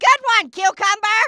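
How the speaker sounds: loud, bellowed yelling. Repeating a remark to someone who asked what was said: yelling. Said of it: "should I continue yelling".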